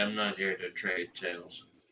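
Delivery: utterly expressionless, flat deadpan delivery. In a role-play, a player's character answers another character, deadpan. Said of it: "I look at him deadpan and say".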